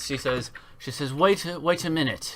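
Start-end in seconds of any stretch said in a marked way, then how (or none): 1.1-2.4 woman's voice calling out, higher. Voicing a cloaked figure calling to the kobolds: female voice calling out. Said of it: "you hear the voice calling".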